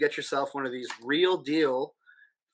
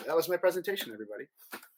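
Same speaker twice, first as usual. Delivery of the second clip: plain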